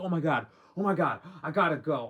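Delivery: mock freaked-out, flustered, loud frantic panicked outburst. Retelling how a date reacted to a phone call: imitating someone freaking out. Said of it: "She starts freaking out".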